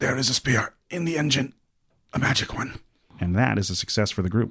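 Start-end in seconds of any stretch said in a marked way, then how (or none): 0.0-2.8 very strained, squashed, squeezed-out voice. Game narrator voices a character with puppy paws pressing on his lungs, very straining voice. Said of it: "he says in a very straining voice".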